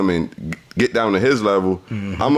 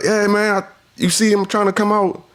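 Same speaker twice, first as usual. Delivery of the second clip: very high, heated, angry yelling, acted out; 11 semitones higher than usual. Retelling how a driver behind him lowered his window, retelling a yell. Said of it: "He's yelling".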